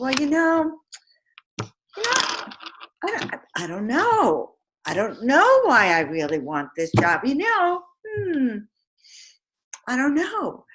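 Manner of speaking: unsure, faltering speech. Acting out a job applicant answering the boss: acting confused and unenthusiastic. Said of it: "a person who's confused, not vibrant".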